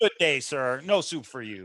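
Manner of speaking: dismissive, final tone allowing no appeal. Recalling a line from Seinfeld: Soup Nazi voice. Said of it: "the soup Nazi".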